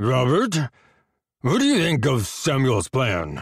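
put-on words heavily slurred. A man asks another man about their leader's plan, heavily slurring his words. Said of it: "heavily slurring his words".

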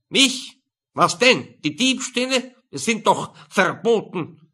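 stagy loud character voice. Reading a character's reply in an office scene of a story: theatrical shouting character voice.

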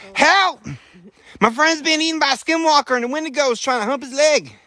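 very high, frantic, panicked voice. Acting out a 911 call about a friend being attacked: acting a panicked caller. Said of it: "Wait, calm down".

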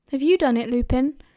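ordinary delivery

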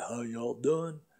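Mississippi drawl, easygoing, rock-and-roll style. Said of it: "he sounded like, you know, [name]".

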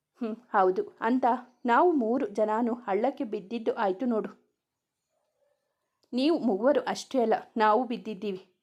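ordinary delivery

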